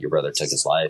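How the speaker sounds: ordinary talk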